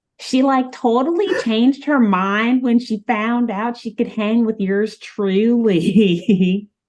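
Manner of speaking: awful, high, put-on Southern twang. Narrating the story, the speaker voices a character who cuts in, with a southern twang. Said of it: "terrible sounding voice, but this one with a southern twang".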